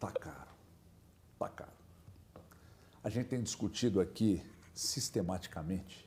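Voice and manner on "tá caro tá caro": hushed, very soft, barely above a whisper. Telling the others something after announcing it: speaking very softly. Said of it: "eu vou falar bem baixo".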